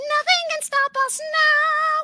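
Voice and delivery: squeaky cartoon mouse voice. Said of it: "[name] does Mickey Mouse".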